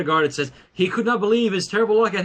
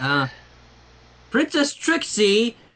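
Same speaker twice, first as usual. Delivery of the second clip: high, shrill, squeaky voice; 4 semitones higher than usual. Narrator reading a pony story, a small stallion addresses the princess, high, shrill voice. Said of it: "he said in the high, shrill voice of a stallion who never quite finished puberty".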